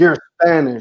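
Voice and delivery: ordinary delivery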